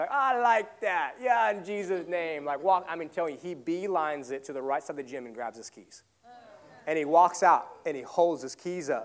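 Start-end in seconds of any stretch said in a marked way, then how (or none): 0.1-2.5 mock very loud, slow, drawn-out, pitched up. Retelling a gym buddy's reply about his lost keys: imitating someone talking real loud. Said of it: "real loud".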